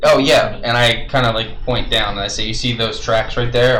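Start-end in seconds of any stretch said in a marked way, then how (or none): none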